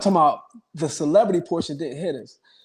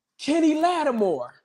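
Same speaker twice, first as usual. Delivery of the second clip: play-acted shrill, very high, pitched-up yell; 10 semitones higher than usual. Retelling a stranger calling out from a passing car: imitating someone yelling. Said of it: "he yelled out".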